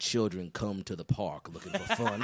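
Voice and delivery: documentary narrator voiceover impression. Recalling the voiceover narrator of a sad documentary: imitating documentary voiceover narrator. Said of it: "That dude's voice is only built for documentaries".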